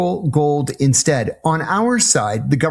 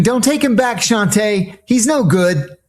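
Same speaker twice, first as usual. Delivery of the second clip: put-on high shouting; 7 semitones higher than usual. Recalling how the audience yelled at a movie character: retelling screaming at the screen. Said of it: "we were screaming at the screen".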